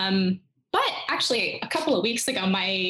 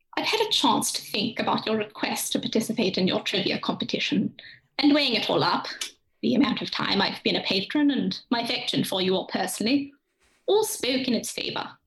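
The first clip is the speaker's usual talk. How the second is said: regal, monarch-like voice. Answering a request to join a trivia competition, do a Queen Elizabeth II voice. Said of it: "my queen elizabeth ii like from".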